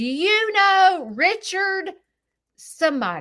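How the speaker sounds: put-on yelling, high and slow. Retelling what a lady said at the security camera: imitating someone yelling. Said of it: "she walks up and she's yelling".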